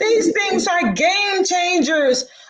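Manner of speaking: high, slow, gushing, overjoyed excited woman's voice.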